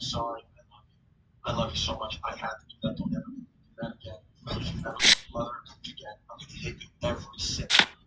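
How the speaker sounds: fatherly, tender, close in-ear delivery. Retelling a father's words in the ear after a hug: imitating a whisper. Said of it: "whispering in my ear".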